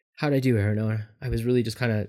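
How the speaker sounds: ordinary talk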